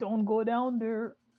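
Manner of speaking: loud drawn-out shout. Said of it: "I shout".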